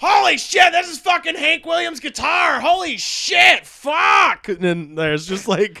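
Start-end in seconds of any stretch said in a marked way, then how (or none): 0.0-4.5 very high, loud, drawn-out, top-of-the-lungs shrieking. Recounting a drunk buddy yelling among kids at the Hall of Fame, imitating Miles yelling. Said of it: "yelling at the top of his lungs".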